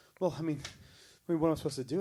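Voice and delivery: mock very loud, high, frantic flustered panic. Retelling a woman at the Magic Kingdom on New Year's Eve, imitating a panicking woman. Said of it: "she starts panicking".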